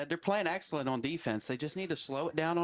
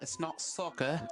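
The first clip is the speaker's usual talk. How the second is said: put-on British accent, a best effort. Joking during a basketball broadcast about a kickball call: British accent. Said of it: "Was that your British accent".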